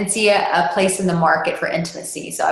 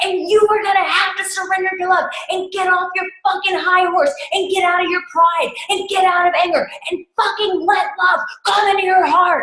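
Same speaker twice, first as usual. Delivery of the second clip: acted-out very high screaming, swearing rant; 13 semitones higher than usual. Retelling a moment of screaming and cussing at him, reenacting own screaming. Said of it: "began screaming and cussing at him".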